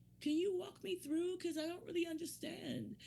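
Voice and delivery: put-on high, passive-aggressive girl voice.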